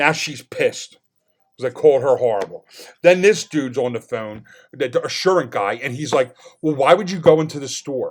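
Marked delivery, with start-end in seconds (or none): 6.6-8.1 mock condescending, snotty, attitude-laden tone. Retelling a phone call with a company's guy, imitating a guy's attitude. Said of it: "said it like attitude".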